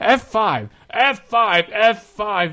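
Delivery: high, frantic yelling at the top of lungs. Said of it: "I started yelling at the top of my lungs".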